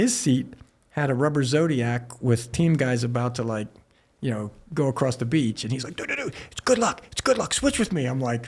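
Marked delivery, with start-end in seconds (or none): 6.0-8.1 very high, hyper wired pleading tone. Retelling how someone begged to switch seats: imitating someone cracked out. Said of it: "cracked out".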